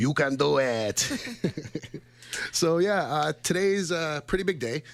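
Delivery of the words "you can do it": slow, drawn-out, stretched delivery. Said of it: "Like they say in all those Adam Sandler movies".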